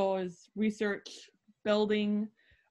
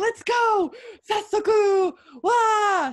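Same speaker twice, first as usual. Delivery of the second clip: put-on enthusiasm, much higher, louder, slower; 12 semitones higher, 9 dB louder than usual. Explaining a Japanese text, acting out the hakase's line: acting very enthusiastic. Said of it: "So he's very enthusiastic".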